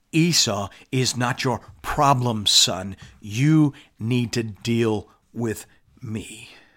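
put-on whisper. Retelling how God grabs Jacob's face at night: acting out a whisper. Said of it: "God grabs his face and whispers".

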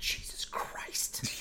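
loud whispered aside, carrying like a stage whisper. Retelling what the people behind said: imitating a loud whisper. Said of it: "that loud whisper that you can hear across".

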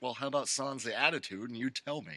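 ordinary delivery

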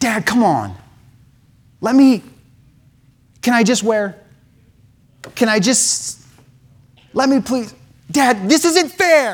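put-on teenager voice. Addressing fathers, the speaker plays a teenager pleading with dad: teenager impersonation. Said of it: "was my best teenager impersonation".

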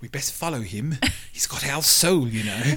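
put-on, upper-class, posh British accent. Imagining a posse following the speaker around: posh British accent. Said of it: "I love how you do the posh British accent".

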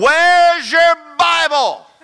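shrill, very loud, high, angry hollering. Recalling watching a movie at home, retelling hollering at the TV. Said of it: "I was hollering at the TV".

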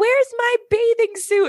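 very high-pitched little cartoon duck voice. Describing beloved animatronics, quoting Donald on the jet ski in his little accent. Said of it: "in his little accent".

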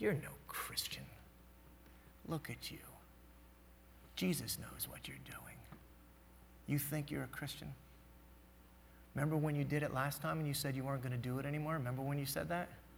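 hushed, accusing, condemning whisper. Acting out the voice that tells the listener they fall short: accusing inner voice. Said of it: "Have you ever heard that voice?".

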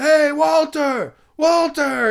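shrill, very high, loud yell. Retelling how a man yelled across a quiet room: imitating a man yelling.

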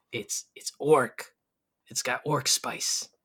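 hushed, secretive whisper. Voicing a cook who leans in and whispers about orc spice: whispering. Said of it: "whispers to you".

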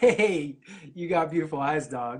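lighthearted, playful joking delivery. Showing how a typed message could have been meant, in a joking tone. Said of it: "it could be like a joke".

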